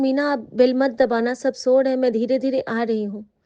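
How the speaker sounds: usual speaking voice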